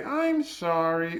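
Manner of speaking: sincere, heartfelt. Explaining prosody with an example, saying a sincere apology. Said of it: "one of them is sincere".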